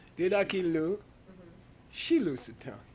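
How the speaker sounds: clear pause after dedakilu, then shilu sutan. Teaching Tibetan sentence phrasing, clear pause after dedakilu. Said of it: "You gotta phrase it like this".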